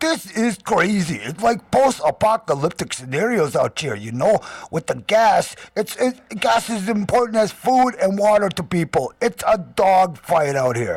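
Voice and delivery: put-on New Jersey accent, casual street talk. Quoting a man's words, in a new jersey accent. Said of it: "I got to do my Jersey accent here".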